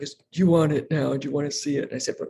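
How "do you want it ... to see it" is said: put-on, imitated, really deep voice. Mother retelling what her son said to her, in a really deep voice. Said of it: "really deep voice".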